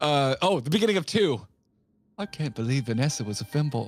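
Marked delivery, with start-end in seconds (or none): 2.2-3.8 sorrowful put-on character voice. Imagining the beginning of the second film, do a sad Austin Powers voice. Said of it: "sad Austin Powers".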